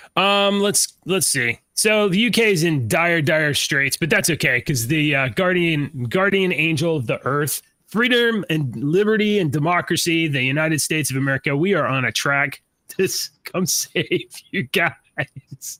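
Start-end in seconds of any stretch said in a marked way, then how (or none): 13.4-15.7 slow delivery, giggling and laughing through words. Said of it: "I can't even say it without laughing".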